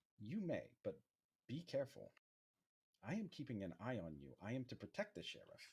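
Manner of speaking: small, mechanical robot voice with swooping pitch. Voicing a very tiny robot that explains it will reuse materials: tiny robot voice. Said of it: "It's like a very tiny robot".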